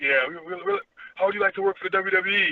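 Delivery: put-on phone voice, high-pitched and swooping. Retelling a phone call, imitating John Laurinaitis. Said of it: "his voice is very imitatable".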